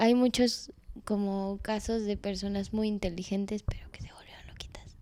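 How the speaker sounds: quiet whisper under the breath. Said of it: "¿Y por qué lo dices en voz baja?".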